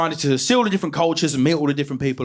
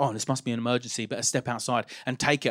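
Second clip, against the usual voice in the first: low, soft, fast, worried hushed voice. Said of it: "I'd be like".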